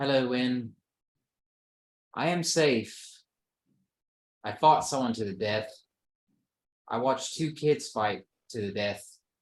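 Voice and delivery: put-on British accent character voice. Voicing Kismet answering a Sending message: British accent. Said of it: "a British accent?".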